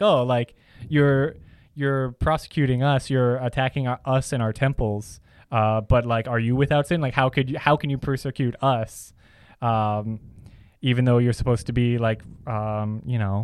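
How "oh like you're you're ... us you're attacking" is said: plain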